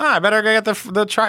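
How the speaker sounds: high-pitched, nerdy voice.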